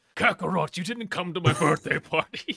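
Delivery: high-pitched anime-character voice. Retelling how an actor leaned in and spoke, in Vegeta voice. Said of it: "I've suddenly turned into Vegeta".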